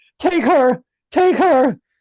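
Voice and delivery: put-on very high, stretched-out, drawn-out screaming. Retelling a film scene where a coward begs: imitating Simon screaming. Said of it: "Simon's screaming".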